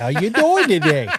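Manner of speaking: sugary, put-on fake-nice Midwestern accent. Mocking the nice greeting of Northern accents, in a fake Midwestern nice voice. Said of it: "That Midwestern nice".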